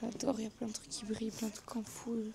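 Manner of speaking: soft, hushed speaking voice.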